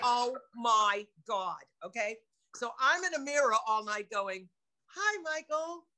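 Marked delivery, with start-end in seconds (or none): 0.0-1.6 upset New York accent slipping back in. Speaker getting upset, their New York accent coming back. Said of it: "my New York accent comes back".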